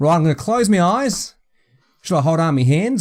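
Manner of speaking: fake, put-on Australian accent. Asking whether to close eyes before guessing an object: put-on Australian accent. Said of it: "I'm doing my Australian accent".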